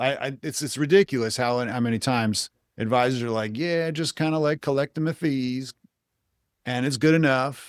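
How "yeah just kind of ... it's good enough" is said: put-on Philadelphia accent, pitched up. Complaining about financial advisors, the speaker mimics them in a philly accent. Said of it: "And they all have an accent".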